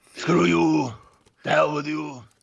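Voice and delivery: gruff, rough, hard shout, high-pitched. Showing the trick to an impression, yelling it: yelling Arnold Schwarzenegger impression. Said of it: "That was the trick with Arnold".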